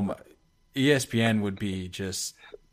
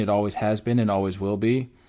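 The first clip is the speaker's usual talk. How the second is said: ordinary talk, nothing marked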